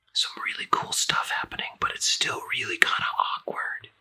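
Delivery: soft, hushed, breathy whisper. Commenting over a movie trailer as it plays, whispering.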